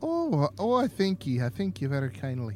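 put-on Irish accent, trilled lilt. Thanking someone who says his accent attempt wasn't awful, in an irish accent with a lilt. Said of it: "can we stop?".

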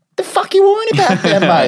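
loud, very high, sing-song put-on Australian accent. Retelling what a man told him about his worry, imitating an Australian accent. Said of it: "he's Australian, it's quite funny".

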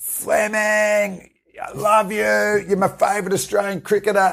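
very high yell, screaming shout, carrying far. Retelling a fan in a Kiwi shirt in a pub: imitating someone screaming. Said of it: "just screams across the pub".

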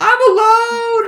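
very high, frantic, shrill, very loud scream. Telling of a young goat waking up left behind by its herd: imitating a screaming goat. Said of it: "freaks out and starts screaming".

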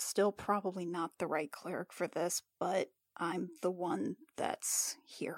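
very quiet, low muttering under the breath. Voicing a cleric character after the room goes dark, muttering to herself. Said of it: "Jill kind of mutters to herself".

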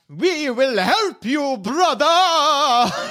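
high, calling-out creature voice. A game narrator voices a yellow-painted creature calling out to the player, booming voice. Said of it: "in a booming voice calls out".

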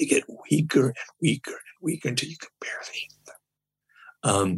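voice dwindling away until barely audible. Acting out voices growing weaker, voice fading to barely audible. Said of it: "Sorry to do some method acting there".

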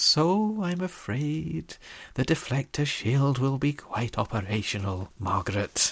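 put-on slight Scottish accent, derisive and sneeringly polite tone. Quoting the Emperor with mocking politeness: Emperor with slight Scottish accent. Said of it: "he has the slight Scottish accent, like Victor Meldrew".

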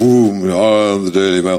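play-acted big, grand, booming voice. Picturing the Daily Mail as the Wizard of Oz man, booming Daily Mail voice. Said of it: "that's got a big booming voice".

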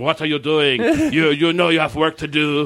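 put-on poodle voice with a French accent. Retelling an episode scene where the poodle shows up: poodle with a french accent. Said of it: "the French poodle shows up with a French accent".

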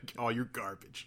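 jaded, cynical, cutting tone. Acting out a hypothetical attack line against people: cynical.

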